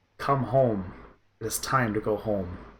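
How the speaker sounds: hushed, soft, half-whispered call. Game master voicing her reply to the players, half-whispering. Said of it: "She whispers back to you".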